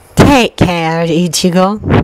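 voice of a talking cat. Narrator reading a character's farewell line, in her cat voice. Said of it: "She groks in her cat voice".

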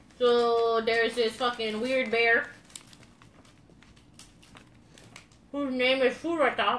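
speech through full mouth. Showing a candy bear on the show, the speaker talks with a mouth full of marshmallow. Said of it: "My mouth is still full of marshmallow".

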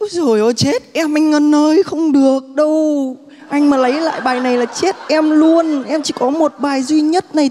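very high, clingy, whiny pleading. Asked to act out how you whine in text messages to ngân, re-enacting a whiny, clingy plea. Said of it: "Em diễn lại cái cảnh đó".

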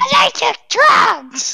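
put-on voice pretending to be high. Playing a party game with friends, pretending to be high. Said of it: "I literally just acted out like I was high".

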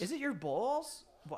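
put-on New York Staten Island accent. Asking about loins and balls in a Staten Island single mom voice. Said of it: "say that like a Staten Island single mom".

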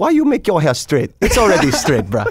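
high, sing-song Hawaiian pidgin. Quoting mom during an interview, in a hawaiian pidgin accent. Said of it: "My mom's all speaking like some Hawaiian pigeon".

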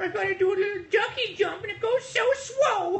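very high squeaky cutesy voice turning L's and R's into W's.

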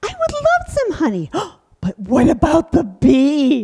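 put-on high, sing-song bear puppet voice. In a puppet show, the bear answers an offer of honey: hungry bear puppet voice. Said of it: "Oh, winter is over, and I'm hungry".

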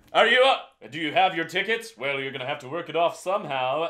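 manly, masculine tone. Giving a steamer character the persona of a train conductor, manly conductor voice. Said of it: "You gave her a pretty manly voice".

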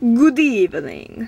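mock vampire-style voice. Introducing her cat Hershey, the speaker says a greeting in a vampire voice. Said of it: "I have a voice of a vampire".

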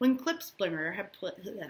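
ordinary delivery

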